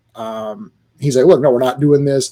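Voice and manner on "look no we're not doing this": ordinary talk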